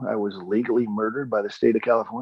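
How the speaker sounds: normal talking voice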